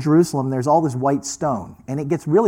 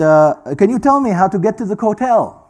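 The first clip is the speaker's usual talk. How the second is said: really bad put-on Hebrew accent; 6 semitones higher, 5 dB louder than usual. Speaker retells a woman asking him the way to the hotel, really bad Hebrew accent. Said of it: "This is my really bad Hebrew accent".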